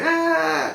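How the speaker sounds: put-on very high, drawn-out yelled ah. Retelling what the crew sounded like at the landing: imitating people yelling. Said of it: "So they was yelling".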